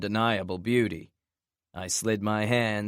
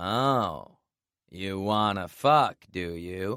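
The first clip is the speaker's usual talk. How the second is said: mocking, sarcastic tone, drawn-out oh. Narrator answering a woman in the story, sarcastic. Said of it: "I asked in a sarcastic tone".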